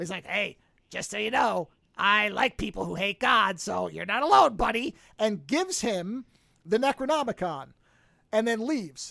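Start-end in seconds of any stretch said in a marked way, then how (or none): 0.3-5.0 rasping, rough, creaky fish-monster voice. Retelling a movie scene where a fish monster speaks to a blasphemer; monster fish man voice. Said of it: "like in this kind of voice".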